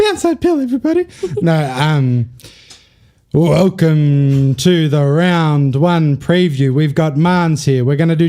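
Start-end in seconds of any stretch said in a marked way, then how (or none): 0.0-1.1 very high, put-on girly voice. Opening the round one preview, in a girl voice. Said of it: "do it in a girl voice".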